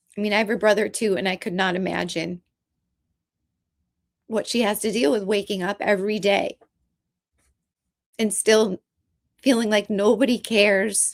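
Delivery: emotional, holding back tears. Talking about a woman's pain over her brother, emotional and holding back tears. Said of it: "I'm just so emotional right now about it".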